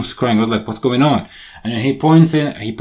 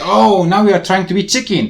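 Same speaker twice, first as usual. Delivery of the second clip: high-pitched shout, yelled out across a distance; 8 semitones higher than usual. Retelling a taunt from a man during an argument: imitating someone shouting. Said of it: "he shouts at me".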